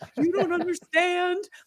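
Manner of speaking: put-on hysterical, high, loud tearful crying wail. Retelling the speaker's own hysterical crying fit, retelling a tearful scream. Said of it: "And I was screaming".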